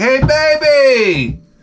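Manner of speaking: very high, drawn-out street catcall. Imitating a construction worker whistling at women: imitating a construction worker catcalling. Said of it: "What did they used to say?".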